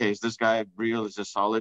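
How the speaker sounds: normal talking voice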